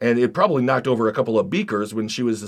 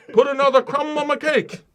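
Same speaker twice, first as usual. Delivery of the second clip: very high voice, botched and bad British accent. After admitting they can't do British, speaker tries anyway: bad British accent. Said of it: "I can't do British".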